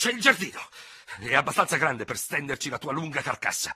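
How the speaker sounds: high, headlong, vehement sputtering. Told he cannot fight while under arrest, the other man replies, sputtering with vehemence. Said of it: "farfugliò l'altro con tanto impeto".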